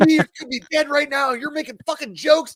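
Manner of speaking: put-on angry scolding. Retelling how a fellow soldier cussed them out: imitating angry cussing out. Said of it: "he instantly starts just cussing me out".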